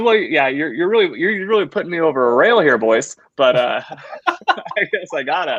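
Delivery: put-on Canadian accent.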